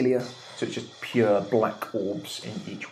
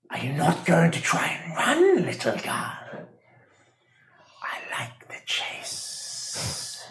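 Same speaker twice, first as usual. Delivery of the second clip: put-on slow, high, taunting, menacing old hag voice; 8 semitones higher than usual. Game master voicing the hag in a player's dream, in an old hag voice. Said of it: "As you look up and you see there's a very tall, elderly lady holding your hand. / elderly lady holding your hand. / elderly lady holding your hand. / you can see this hag".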